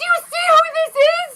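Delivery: very high-pitched shrieking hysterics. Retelling Jessica jumping up and down at the TV: imitating Jessica screaming hysterically. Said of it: "she's screaming in hysterics".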